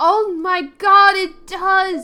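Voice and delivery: very loud, stretched-out, drawn-out shout. Reacting on stream as a character opens his eye: yelling. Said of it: "I'm yelling".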